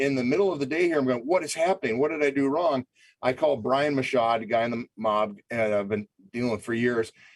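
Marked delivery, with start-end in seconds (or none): 1.2-2.8 frantic, panicked, bewildered and lost-sounding. Retelling his own reaction in the middle of the day, retelling own panic. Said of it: "I'm panicking".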